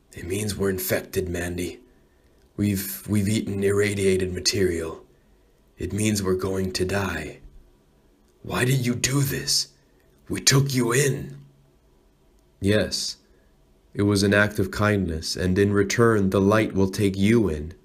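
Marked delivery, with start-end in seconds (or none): 0.2-11.4 put-on hushed, struggling older voice breaking down, sinking low. The doctor answers Mandy's question, as an older doctor breaking down, hushed. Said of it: "The doctor's struggling again. He's older, / He's older, / He breaks down into a hush now. / He's older, / He breaks down into a hush now. / "No, doctor".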